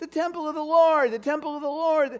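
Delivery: very high-pitched voice, way up. Retelling how he said these words, in a very high-pitched voice. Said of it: "his voice was like three octaves higher".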